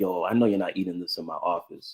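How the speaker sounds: annoyed, indignant, irritated tone with rising pitch. Retelling what a man said in his office, imitating someone irritated. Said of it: "he just kind of got like irritated".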